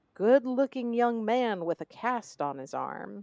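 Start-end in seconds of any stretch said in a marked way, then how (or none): none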